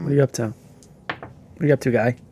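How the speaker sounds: quiet, whispered muttering under the breath. Following someone while invisible, whispering to himself. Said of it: "I'm whispering it to myself".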